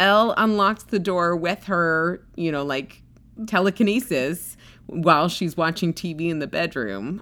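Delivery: ordinary talk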